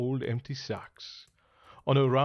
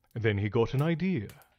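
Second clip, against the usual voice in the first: ordinary delivery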